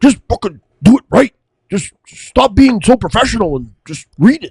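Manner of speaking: very high, flat-out, direct delivery. Retelling what Shelly said about reading the sponsor ads: imitating Shelly. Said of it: "And then Shelly's like".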